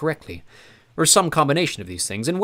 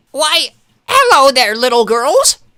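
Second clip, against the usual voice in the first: ridiculously high, very loud put-on voice; 10 semitones higher, 11 dB louder than usual. An evil man pretends to be a receptionist greeting little girls, in a ridiculously high voice. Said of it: "Count Olaf said in a ridiculously high voice".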